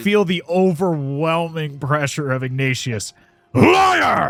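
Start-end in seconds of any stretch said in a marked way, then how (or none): 3.5-4.3 very high, daunting, shouted voice. Voicing Ignatius, heard in a character's head, in a daunting shouting voice. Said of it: "this daunting, shouting voice in your head".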